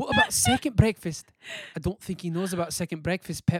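loud, swooping, locked-in put-on Scottish accent. Quoting a favorite line from the movie, in a scottish accent. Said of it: "lock in a Scottish accent".

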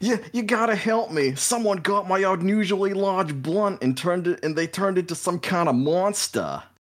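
very high, shrill, frantic, panicked screaming. The game master voices a fleeing punk begging a player's character for help: screaming. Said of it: "and is just screaming".

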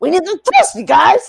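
high, put-on Staten Island, New York accent. Doing an impression of Nichols from Orange: Nichols impression. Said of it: "that was my Nichols impression".

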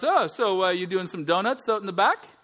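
knowing fatherly tone. Retelling what his dad asked him, imitating dad's tone. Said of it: "Like that dad tone".

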